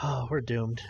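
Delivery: hushed half-whisper, as if to herself. Voicing a character who mutters as someone walks by: half-whispering to herself. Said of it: "whispers to herself".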